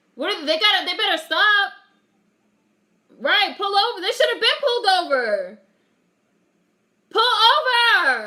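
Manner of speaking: high yelling, stretched very long. Reacting out loud while watching a movie, yelling. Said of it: "Sorry, I'm yelling".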